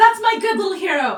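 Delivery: very high-pitched, very loud cheer. Voicing a character cheering for the little hero: June cheering. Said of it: "June says".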